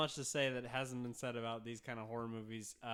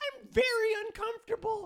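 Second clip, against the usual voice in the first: put-on woman's voice, higher and louder; 10 dB louder than usual. Acting out a horror movie scene as the woman: lady voice. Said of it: "I like his lady voice".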